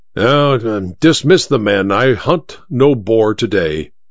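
ordinary delivery

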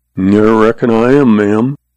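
ordinary talk

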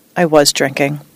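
ordinary delivery, nothing marked

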